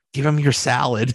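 whispering, as an aside. Acting out the smart guy who whispers advice to him, whispering. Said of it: "the smart guy that whispers to him is like".

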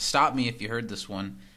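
plain

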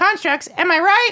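very high, tiny squeaky voice. A game character answers someone who is lost, in a squeaky voice. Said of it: "he's got a really squeaky voice".

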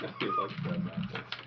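taunting whisper, high in pitch and unvoiced. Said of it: "repeat in put-on voice".

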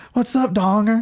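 put-on, high-pitched screamed shout. Retelling greeting a man by nickname as he came to the door: retelling screaming across the room. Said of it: "I'm just screaming across".

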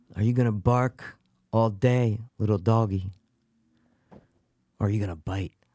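slow, drawn-out movie-style drawl. Answering a request to do a best Michael Madsen impression. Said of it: "Can you do your best, Michael, uh, Michael Madsen?".

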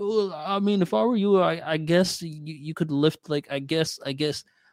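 put-on unsure, wishy-washy tone. Retelling how a trainer gave advice: imitating an unsure hesitant voice. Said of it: "had no, like, conviction in his voice".

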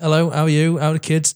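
grand elf queen voice. Retelling a film scene, imitating an elf queen. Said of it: "Meet a fucking elf queen ... She's like".

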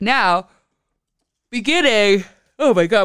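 speaking through a yawn. Giving the week's energy reading on an episode after no sleep, yawning mid-sentence. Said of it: "pardon my yawn".

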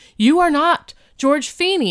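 flustered. Retelling a cafeteria confrontation: imitating a flustered man. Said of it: "flustered in a way you've never seen him".

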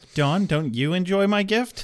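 calm, matter-of-fact tone, slightly high in pitch. Retelling a dream scene where Buffy smothers Dawn: imitating Buffy, calm and matter-of-fact. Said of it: "Very calmly. And matter-of-factly".

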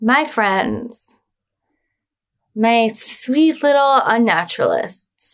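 eerie, sinister, creepy, unsettling voice. Signing off a scary story to the listeners, in a creepy voice. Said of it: "Why are you getting creepy with our listener?".

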